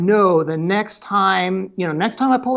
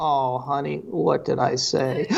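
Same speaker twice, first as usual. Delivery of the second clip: put-on deadpan, lower and quieter; 5 semitones lower, 5 dB quieter than usual. Retelling an exchange, speaker voices the reply to a pleading request in mock deadpan. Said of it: "And it's just deadpan".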